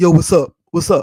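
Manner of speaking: very loud, put-on dude voice. Retelling answering a phone call, the speaker talks like a dude. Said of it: "when I changed my voice and started talking like a dude".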